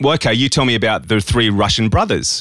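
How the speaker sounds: plain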